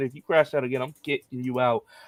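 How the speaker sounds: usual speaking voice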